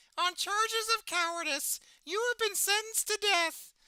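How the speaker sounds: very high-pitched cartoon puppet voice. To chat, picturing Elmo in a commissar's outfit: Elmo voice as a commissar. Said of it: "see Elmo in a commissar's outfit".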